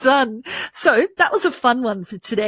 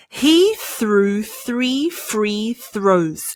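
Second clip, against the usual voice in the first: slow, deliberate, careful enunciation, word by word; 3 semitones lower than usual. Teaching a tongue twister and trying it slowly first, speaking slowly. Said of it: "Let's try it slowly first".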